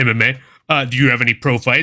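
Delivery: put-on arrogant voice. Retelling how a guy questioned his MMA experience, mimicking an arrogant guy. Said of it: "dude arrogantly is like".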